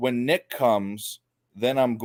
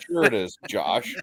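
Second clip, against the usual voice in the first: ordinary talk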